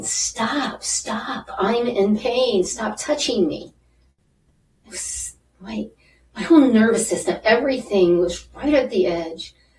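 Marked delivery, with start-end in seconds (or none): 0.0-3.7 mild, drawn-out, acted-out outcry of pain. Retelling a massage session that hurt: retelling her own yell. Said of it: "And I remember yelling".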